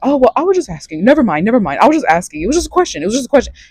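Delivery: mock defensive, high, backpedaling tone. Retelling how she answered after being challenged: imitating a defensive reply. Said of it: "went into a defensive mode".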